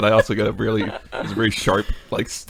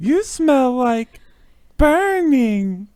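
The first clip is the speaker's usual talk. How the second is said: very high, slow, stretched-out character voice; 3 dB louder than usual. Reading a quote aloud: Annie impression. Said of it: "I'm playing Annie".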